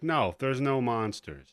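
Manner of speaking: put-on, very matter-of-fact, plainly stated delivery. Retelling a movie mom's reply to her kids, imitating matter-of-fact tone. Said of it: "very matter of fact".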